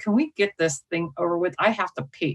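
whispered aside, put on. Retelling what a speaker whispered just before going on stage: imitating Lauren whispering. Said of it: "she leans over and whispers in my ear".

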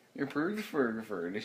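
put-on Swedish accent.

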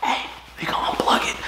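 soft, voiceless whisper. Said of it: "I started to whisper to Chark".

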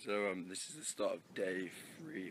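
hoarse, very quiet, voice nearly gone. Starting day three of the festival vlog: hoarse, worn-out voice. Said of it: "my voice is absolutely gone now".

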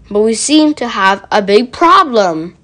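ordinary delivery

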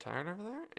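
muttered under breath. Retelling a remark made to the doodling listener, muttered under the breath. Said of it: "under my breath went".

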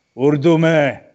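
sudden, loud, high bellow. Telling an anecdote, acting out how a man suddenly called out at a formal occasion: retelling a bellowed shout. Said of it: "he bellows out".

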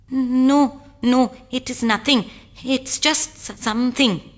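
stuttering. A man answers when asked to hand over his gift, stuttering. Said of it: "stuttered Sudhama".

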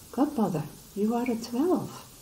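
high, astonished cry of surprise. A narrator reads Twinkle waking to see her godmother, crying out in surprise. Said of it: "she cried in surprise".

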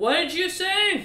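put-on very high-pitched, aged old woman voice. Voicing an elder kobold woman cupping her ear to hear: elderly deaf kobold woman voice. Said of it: "puts her ear, a hand to her ear ... and goes".

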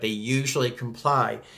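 usual speaking voice

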